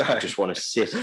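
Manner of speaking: normal talking voice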